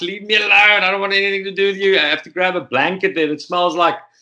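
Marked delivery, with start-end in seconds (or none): 0.0-2.0 urgent, not very loud shout. Retelling being surrounded by other men, imitating own past screaming at them. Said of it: "I'm like screaming".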